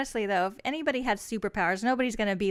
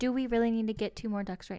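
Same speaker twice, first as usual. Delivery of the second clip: acted mock-serious tone; 4 dB quieter than usual. Retelling a conversation with him, imitating his serious tone. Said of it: "he tried to get all serious".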